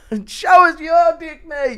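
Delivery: mock slurred, bullying voice. Doing a requested impression of drunk Connor bullying Marab: impression of drunk Connor. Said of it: "impression of drunk Connor bullying Marab".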